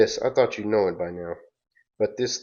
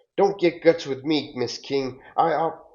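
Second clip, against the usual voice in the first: angry, mad, stammering outburst, pitched up; 7 semitones higher than usual. Retelling an argument, the speaker imitates Mister Ross getting mad. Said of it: "And then Mister Ross gets mad".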